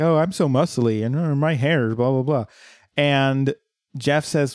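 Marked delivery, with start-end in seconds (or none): 0.0-2.4 put-on mocking voice. Retelling how two characters mimic Jeff: mocking imitation of Jeff. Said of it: "they just mimic Jeff".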